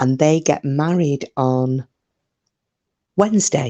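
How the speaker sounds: hushed, quiet whispering voice. Telling viewers about the next-door neighbours: talking quietly, whispering. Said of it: "I'm gonna have to talk quite quietly now".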